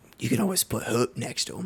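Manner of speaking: soft, breathy, whispered aside. In the game scene, a character leans forward and speaks in a whisper. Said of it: "he whispers".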